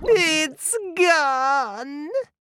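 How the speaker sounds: very high, drawn-out squealed cry. Flamingo watches her raft vanish beneath the water, squealing. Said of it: "She squealed once again".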